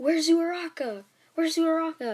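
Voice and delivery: high-pitched, loud yelling, repeated. Retelling a story, the speaker acts out a character crying out on flying back, acting out a yell. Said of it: "And he yells".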